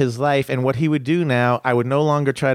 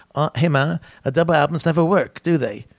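put-on a slight English accent, a little lilt; 3 semitones higher than usual. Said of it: "this will be my [name]".

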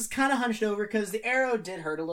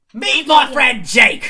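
very loud, booming announcer-style voice; 4 semitones higher, 14 dB louder than usual. Voicing Lab, who calls out to the goblins: Lab's voice. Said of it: "you hear Lab say".

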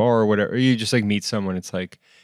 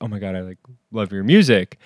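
put-on sheepish voice. Retelling what someone in the shop said while leaving: imitating someone speaking sheepishly. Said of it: "very sheepishly".

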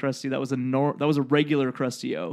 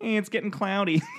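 nonchalant, totally unconcerned, pitched-up, tossed-off tone; 6 semitones higher than usual. Retelling a cartoon scene as gas seeps in: imitating nonchalant Chief Wiggum. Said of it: "It's so, like, nonchalant about it".

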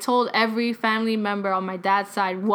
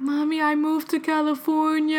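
frightened, scared, high-pitched blurted speech; 7 semitones higher than usual. Retelling telling mom about moving away: imitating own scared voice. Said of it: "so scared to tell her".

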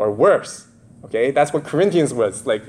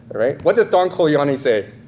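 ordinary delivery

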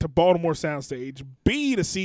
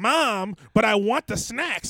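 mock demanding little-kid voice, high and yelling; 6 semitones higher than usual. Describing kids in a grocery store, imitating a kid yelling.

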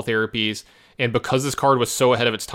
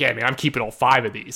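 put-on joking tone. Retelling your own reply to another player after the cards are revealed, really jokingly. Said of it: "really jokingly".

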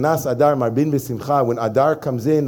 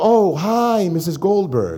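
slow, very drawn-out, saintly sing-song voice; 5 semitones higher than usual. Acting out a rabbi's greeting to someone, putting on the rabbi voice. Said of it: "We get the rabbi voice on".

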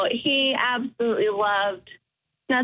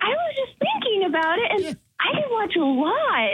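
very high, sweetest, most loving earnest little voice; 10 semitones higher than usual. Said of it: "very earnest".

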